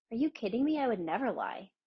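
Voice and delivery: sharp, cutting, offended retort. Recounting your answer when she asked if you were lying: retelling a sharp retort. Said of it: "it was just a sharp".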